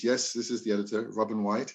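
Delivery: normal talking voice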